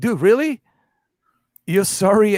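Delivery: put-on chuckling through words. Retelling a video of someone laughing at an opponent: imitating someone laughing. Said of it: "He's laughing".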